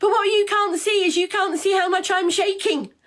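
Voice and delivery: furious, very high-pitched angry yelling. Answering critics online about a stutter, angry shouting. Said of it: "I'm angry and I'm shouting at you".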